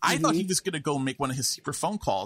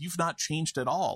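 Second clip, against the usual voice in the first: put-on disgusted tone; 3 semitones higher than usual. Retelling a character's line from a movie scene, imitating a disgusted tone. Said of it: "just with visible disgust in her voice".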